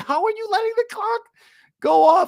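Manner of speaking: shrill, very high screaming outburst. Recounting a meltdown while the clock ran out, retelling a scream at the tv. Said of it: "I'm screaming at the television".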